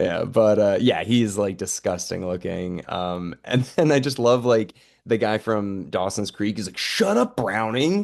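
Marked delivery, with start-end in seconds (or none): 6.8-8.0 put-on frantic, fed-up, pitched-up freaked-out blurt. Retelling what a guy said during a fight on a plane, retelling someone freaking out. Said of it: "And he's like freaking out".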